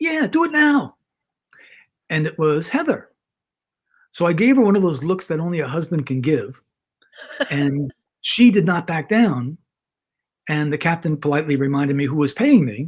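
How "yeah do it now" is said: tiny, very high, squeaky little voice. Retelling how his wife chimed in from the background: imitating Heather's squeaky voice. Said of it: "this little squeaky voice in the background go".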